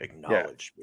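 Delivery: smooth, cool, unbothered, chilled-out menacing tone. Imitating how Roman Reigns says his line: cool Roman Reigns impression. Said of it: "he says it all cool".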